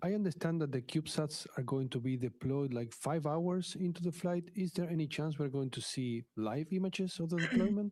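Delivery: Spanish-inflected Mexican English accent. A man called on by the host asks his question, with a Mexican accent. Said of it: "He sounds like the Mexican hamster".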